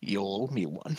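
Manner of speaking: very soft, hushed, taunting, mocking murmur. The game master voices a voice in the player's head, mocking voice. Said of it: "a voice almost mockingly in the back of your head says".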